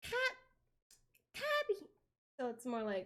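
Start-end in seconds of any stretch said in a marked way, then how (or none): 0.0-1.9 piping, very high-pitched call. Trying out a call again, higher: imitating a high call. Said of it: "get it in the right spot".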